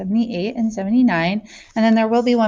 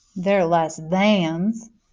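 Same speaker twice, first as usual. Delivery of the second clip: put-on Southern accent; 2 semitones lower than usual. Showing a way to remember less-than symbols: put-on Southern accent. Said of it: "say it like you're Southern".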